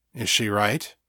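ordinary delivery

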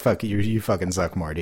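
ordinary talk

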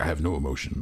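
flat, deep monotone kept dead level. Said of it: "one note and flat".

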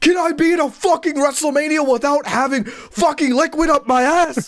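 shrill, over-the-top, very high-pitched dramatic ranting outburst. Retelling getting liquid spilled on them at wrestlemania, retelling going off. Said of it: "just going off".

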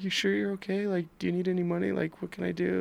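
put-on sappy dad voice, near tears, very high. Dad retells fussing over his son, acting almost in tears. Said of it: "almost crying".

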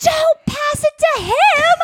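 very high-pitched, drawn-out yell. Retelling a basketball game, redoing own line from the stands: imitating own yell. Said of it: "And I might have yelled".

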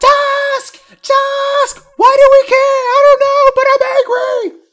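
very high, shrill, very loud screeching goblin voice. Narrating the goblins' reaction in a game session, screeching goblins. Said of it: "the goblins screech".

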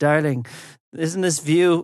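put-on soft, breathless, gasping, panting speech. Imagining dinner with a wife at high altitude: pretend panting, out of breath. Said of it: "like, we're out of breath".

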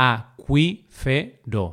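each syllable stretched out very slowly.

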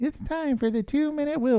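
tiny, mournful squeak, very high pitch. Recalling how Will used to open his segment on this show: imitating Will's squeaky sad voice. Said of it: "with his little squeaky sad voice".

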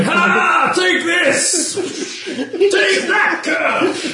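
taunting battle cries. Voicing a rider clattering through the streets: taunting rider's battle cries. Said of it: "And he's like".

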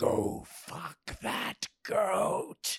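hissed words, spoken close in. A woman pulls a man close and kisses him, then hissing into his ear. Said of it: "she hissed into his ear".

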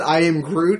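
normal talking voice

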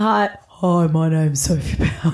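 put-on very deep voice. Introducing oneself while trying to out-deep another speaker: put-on very deep voice. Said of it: "I'm trying to out-deep, uh, John Walpole's voice".

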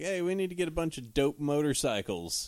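ordinary talk

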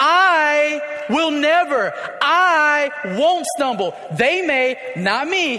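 put-on boastful, very slow, loud stress on I. Retelling Peter at the table: acting Peter proud, stress on I. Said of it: "Now the emphasis is not on I".

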